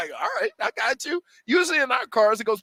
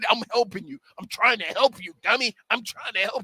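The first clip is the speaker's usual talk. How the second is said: put-on laughing speech, lower; 4 semitones lower than usual. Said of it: "he couldn't stop laughing".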